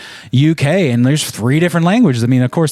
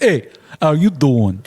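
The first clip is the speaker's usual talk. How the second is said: put-on Brooklyn accent. Showing how someone from Brooklyn would greet you, in a Brooklyn accent. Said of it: "Like if you met someone from Brooklyn".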